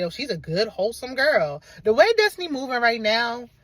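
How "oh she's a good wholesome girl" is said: ordinary delivery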